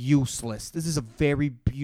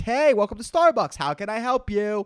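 bright, sing-song, forced customer-service cheerfulness; 9 semitones higher, 5 dB louder than usual. Speaker on a podcast acting out greeting customers at his job, with fake joy. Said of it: "with that fake joy".

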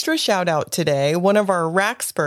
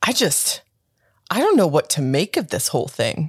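play-acted dead-serious, slow, grave, swooping pitch; 3 semitones lower than usual. Retelling Kev's remark after reading a book chapter, in a serious tone. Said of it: "He had such a serious tone".

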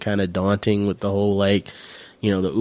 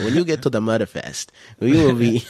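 put-on thick, laid-on European accent; 3 semitones higher than usual. Imitating a conference presenter's pronunciation, in a thick european accent. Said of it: "like this thick, like European accent".

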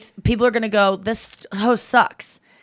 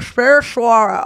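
pretend muffled mouth-full voice, louder; 5 dB louder than usual. Retelling how a spoken word got remembered: mock mouth-full voice. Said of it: "that's what I sound like when I have a penis in my mouth".

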